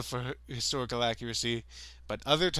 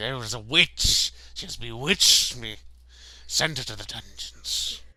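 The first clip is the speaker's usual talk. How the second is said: put-on vampire-like hiss, louder; 2 semitones lower, 5 dB louder than usual. Retelling a scene where a priest condemns a woman: imitating a character hissing like a vampire. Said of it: "hissing like a vampire. He's like".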